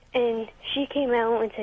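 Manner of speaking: normal talking voice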